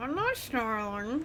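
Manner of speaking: choked, strangled sound, as if something's stuck in throat. Denying snarling to the others: sounding like something stuck in throat. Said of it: "You sound like you have something stuck in your throat".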